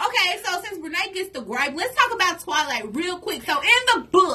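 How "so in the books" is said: loud, projecting yell. Launching into Twilight talk, addressed to the audience, yelling. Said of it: "Why are you yelling at the audience?".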